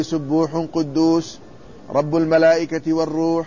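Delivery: ordinary talk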